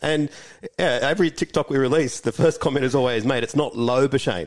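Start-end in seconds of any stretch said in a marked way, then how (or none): none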